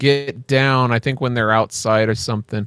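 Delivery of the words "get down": plain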